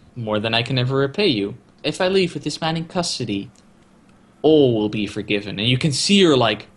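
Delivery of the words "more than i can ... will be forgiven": plain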